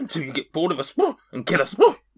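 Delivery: strange horse-like voice. A horse answers a person who keeps talking to it, bizarre horse voice. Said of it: "this horse has got such a bizarre voice".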